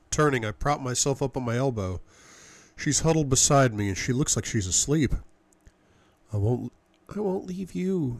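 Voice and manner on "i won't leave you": mumbled, much higher, slower. Huddled beside the narrator, seemingly asleep, she speaks, mumbling. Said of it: "she mumbles".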